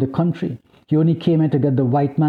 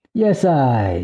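drawling, drawn-out delivery; 2 semitones lower than usual. Narrator reads a man's reply to a woman beside him, drawling. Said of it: "he drawled".

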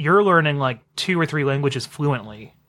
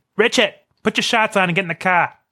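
put-on Massachusetts accent, pitched up; 5 semitones higher than usual. Talking about family from Massachusetts, the speaker quotes relatives in a Massachusetts accent. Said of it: "you get that accent when your parents are both from Massachusetts".

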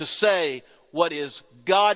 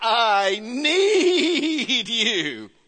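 mock child voice, high, loud and desperate; 7 semitones higher than usual. A parent retells a child's call at bedtime, imitating a desperate loud plea. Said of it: "she repeated".

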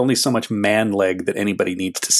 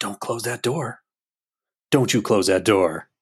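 imitated whisper. Retelling what Pascal the ghost whispers, whispering as Pascal. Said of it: "Pascal's just whispering like".

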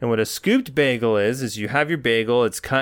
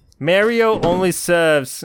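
clumsy put-on New Jersey accent, pitched up; 6 semitones higher, 5 dB louder than usual. Speaker describes how a bagel server works, in a bad new jersey accent. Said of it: "my New Jersey accent's bad".

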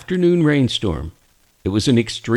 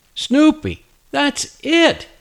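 sudden, very high-pitched exclaiming burst. First-person narrator responds to a suggested name for the collie puppy; exclaiming. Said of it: "I exclaimed".

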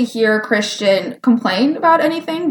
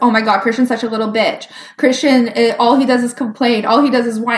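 plain

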